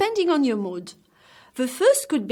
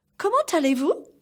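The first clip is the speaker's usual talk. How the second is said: pitch climbing upward on the final word vous; 4 semitones higher than usual. French lesson on asking questions, rising pitch at the end. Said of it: "I raise the pitch of my voice".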